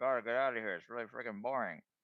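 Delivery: hushed whisper out of the side of mouth. A character whispering to the group, whisper out the side of mouth. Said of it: "He'll like whisper to you guys out the side of his mouth".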